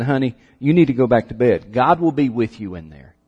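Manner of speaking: acted-out drowsy, half-awake, sleepy voice. Telling a joke, voicing the mother answering her scared daughter, imitating sleepiness. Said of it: "her mother kind of sleepily said".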